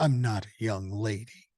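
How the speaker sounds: put-on voice of an annoyed, angry little girl. Retelling a granddaughter's reply to a greeting: imitating an angry little girl. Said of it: "she looks at me truly pissed off and she goes".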